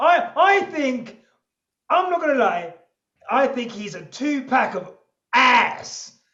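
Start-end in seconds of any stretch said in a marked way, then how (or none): 3.3-6.1 put-on, punchy Americanised accent. Giving an opinion on someone, said in an american accent. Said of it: "I put it in an American accent".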